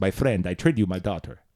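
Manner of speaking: put-on oil baron accent. Showing off the foreign accents he does, in an oil baron accent. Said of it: "it's like when you know those oil barons".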